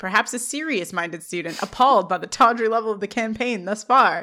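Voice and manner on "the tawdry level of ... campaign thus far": ordinary talk, nothing marked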